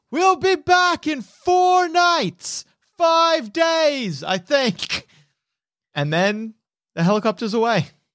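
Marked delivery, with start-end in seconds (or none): 0.1-5.0 very high, carrying yell. As the helicopter rises, crew chief [name] leans out, yelling for all to hear. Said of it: "yells so that as many people can hear".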